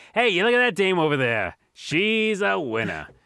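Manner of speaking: put-on old-timey 1940s-style voice. Imitating how they talk about ladies on the streets: 1940s-style voice. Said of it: "She's a winner in the 40s voice".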